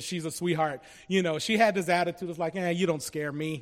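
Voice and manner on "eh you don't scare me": ordinary talk, nothing marked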